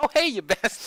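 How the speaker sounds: mock cheery, very high, loud sunny voice. Retelling how a man always says it, imitating his happy-sounding greeting. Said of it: "he sounds so happy too".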